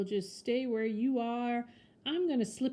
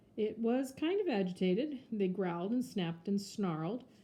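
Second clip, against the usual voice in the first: plain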